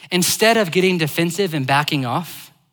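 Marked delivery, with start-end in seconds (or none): none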